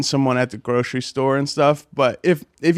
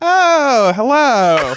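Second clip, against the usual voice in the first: flamboyant, campy, very high put-on voice; 10 semitones higher, 5 dB louder than usual.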